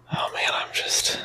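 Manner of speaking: breathing heavily. Speaking on the show right after a pre-show workout, breathing heavily. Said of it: "Why are you breathing heavily?".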